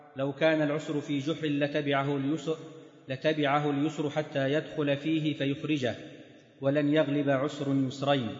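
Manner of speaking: plain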